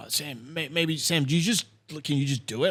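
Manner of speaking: mock flustered, stammering, panicked, stumbling speech. Retelling a sample pedal failure on stage before playing: imitating Neil panicking. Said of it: "and in a panic, Neil's like".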